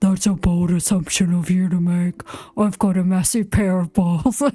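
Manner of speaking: fake deep man's voice, put-on low. Answering a rude message from chat in a put-on deep man's voice. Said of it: "I can't make my voice deep enough".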